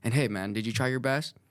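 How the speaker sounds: usual speaking voice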